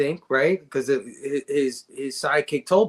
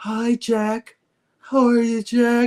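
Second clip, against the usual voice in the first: put-on slowed-down possessed girl voice, higher; 9 semitones higher than usual. Imitating the possessed girl from the cast greeting Jack: imitating slowed-down possessed girl voice. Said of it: "if they slow down your voice".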